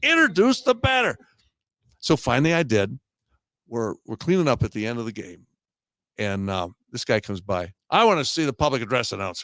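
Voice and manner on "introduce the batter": put-on shrill, very high-pitched screaming. Retelling a man in the announcer's earpiece during a game, imitating someone screaming. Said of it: "This guy is screaming at me in my earpiece".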